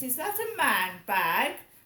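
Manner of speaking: very loud, swooping, put-on posh accent. Repeating what she asked about a bag, in a put-on posh voice. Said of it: "in her posh voice".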